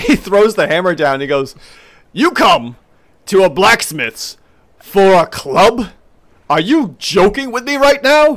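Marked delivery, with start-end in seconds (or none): 2.1-8.4 pitched-up, exasperated, grumpy blacksmith voice. In a tabletop game, the blacksmith answers a player seeking a club; blacksmith character voice. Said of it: "And as you get up to the blacksmith here, [name]".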